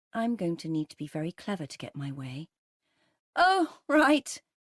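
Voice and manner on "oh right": sunny, very high, very loud, upbeat chirp. Wife answering her husband while trying to get her way, upbeat. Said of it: "I keep my voice upbeat".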